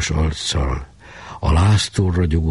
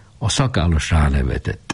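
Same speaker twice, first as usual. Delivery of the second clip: usual speaking voice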